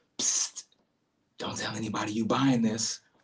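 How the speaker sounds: whispering bumblebee voice. Voicing the bumblebee on a cheap food jar: bumblebee whispering. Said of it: "the bumblebee on the jar of the cheap food is whispering at you".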